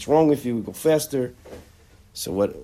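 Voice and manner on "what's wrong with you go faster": exasperated, impatient, put-on screaming. Retelling how someone yells at a chazan davening slowly: imitating someone screaming. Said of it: "starts screaming out".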